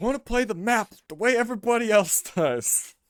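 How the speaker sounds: put-on raging gamer voice. Imitating a player who was raging during a game: imitating Zumpy raging. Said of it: "It was when he was raging".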